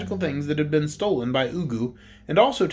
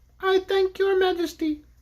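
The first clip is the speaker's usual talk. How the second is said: very high, squeaky little wind-up toy voice. A toy bear speaks once its crank is turned, in a squeaky voice. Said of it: "it said in its squeaky voice".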